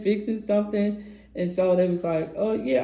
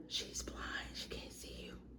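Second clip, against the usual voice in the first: very soft, hushed whisper, breath only. Retelling what the lady behind the counter said: imitating a whisper. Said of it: "will whisper".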